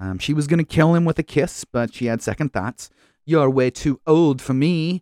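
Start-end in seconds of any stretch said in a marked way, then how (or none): 3.2-5.0 put-on slow, drawn-out, strange British accent. Retelling a scene where the character turns someone down: Ivy's weird British accent. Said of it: "She did some weird British accent during it".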